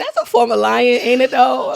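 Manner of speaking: normal talking voice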